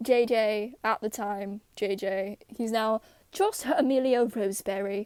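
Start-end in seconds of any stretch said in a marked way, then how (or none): 3.3-5.1 fake British accent, put on for laughs. Saying a drawn character's new name aloud: fake British accent. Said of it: "in the fake British accent".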